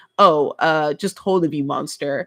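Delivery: slow, play-acted, overdone, exaggerated sarcasm. Retelling a joking comment posted under a clip: imitating own sarcastic comment. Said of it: "I sarcastically commented".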